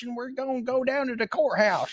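very high, movie-style fake Southern accent. Discussing accents in movies set in the South, doing a mock Southern accent. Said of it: "Everybody's talking like this".

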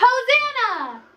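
very loud, high, shrill yell at full volume. Leading a shouting game on a count of three: shouting loudly. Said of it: "loud on the count of three".

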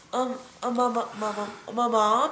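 put-on stutter. Imitating a friend's habit of stuttering: imitating Yvette stuttering. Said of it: "'Cause Yvette does that. She goes".

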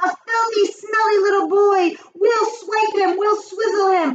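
high-pitched, exclaiming witch's cry. All the witches in the audience cry out together: cried out. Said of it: "cried all the witches".

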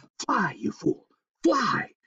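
slow, drawn-out, hissing, sibilant voice. Reading a story, the squirrel Hipswitch flicks Micah the moose's ears: hissed.

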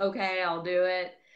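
mock-sarcastic appeasing tone. Retelling giving in to her husband's request, retelling sarcastic appeasing. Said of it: "I'm sarcastically like appeasing my husband".

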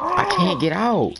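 panicked cry.

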